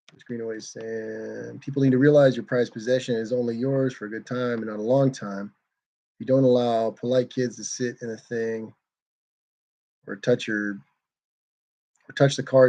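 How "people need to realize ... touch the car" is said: ordinary talk, nothing marked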